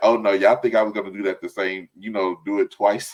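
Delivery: normal talking voice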